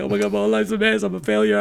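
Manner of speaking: fake blubbering, high sobbing wail like a tearful breakdown. Retelling breaking down in a group circle, imitating own past bawling. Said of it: "And I'm bawling".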